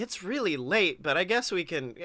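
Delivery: ordinary talk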